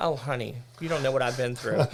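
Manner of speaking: plain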